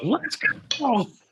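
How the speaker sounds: put-on very high scream. Telling friends what a man yelled at his wife, retelling a scream. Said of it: "Just screamed it".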